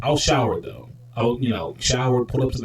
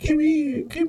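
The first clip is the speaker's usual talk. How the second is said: very high, fake, put-on girly voice; 3 dB quieter than usual. Retelling what a man in a wig said, faking a girl's voice. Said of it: "trying to sound like a girl".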